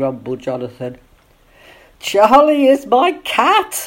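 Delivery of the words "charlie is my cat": very high, very slow gasp through laughter. Nancy answers Jonathan's grumbling question, gasping with laughter. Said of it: "gasped Nancy with tears of laughter".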